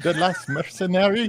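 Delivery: very high-pitched, loud, put-on French accent. Players joke about saying a line in a french accent: french accent. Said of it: "use a French accent and everything sounds good".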